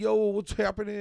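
big-shot, swaggering superstar voice, full of swagger. Retelling walking into a party with a friend, imitating a superstar entrance. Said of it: "we walk in like superstar".

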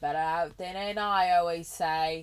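loud, booming ogre voice in a bad Scottish accent. After burping and apologizing to the other speaker, speaker quotes a saying in terrible Shrek impression. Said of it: "That was a terrible Shrek impression".

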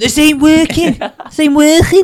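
put-on very loud, high bawling Scouse accent. Retelling what a man bawled when something wouldn't work: retelling a Scouse bawl. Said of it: "Balling in his Scouse accent".

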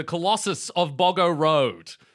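loud, high, over-enthusiastic hype-man announcing.

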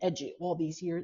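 ordinary talk, nothing marked

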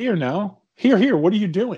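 put-on very polite, courteous, mild tone. Retelling how he reacted when she grabbed his leg: imitating a very polite protest. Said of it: "Very politely".

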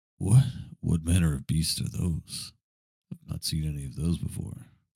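hushed whisper. Speaking in character to the group while hiding, whispering under breath. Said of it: "I whisper under my breath to the group".

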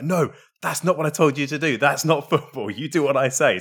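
play-acted furious screaming rant, pitched high. Retelling a manager screaming at a player in training: imitating Conte screaming. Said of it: "Conte went mad at him and started screaming at him".

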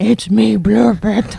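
very high, creaky, squeezed character voice. Asked by another player to perform the character's voice: Blorpette voice. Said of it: "do Blorpette's voice".

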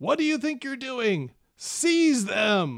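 agitated, high bellow with wildly swinging pitch. A voice bellows from a shade structure off the road: bellowing. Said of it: "you hear a voice bellow from the tent".

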